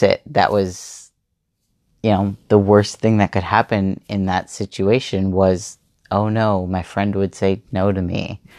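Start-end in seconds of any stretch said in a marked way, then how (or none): none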